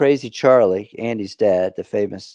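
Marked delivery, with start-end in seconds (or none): none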